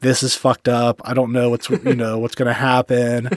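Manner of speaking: put-on tearful, crying voice. Retelling calling parents about a bad burn: imitating own past crying. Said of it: "my parents crying".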